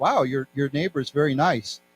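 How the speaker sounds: plain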